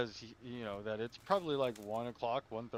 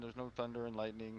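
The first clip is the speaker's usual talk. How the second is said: normal talking voice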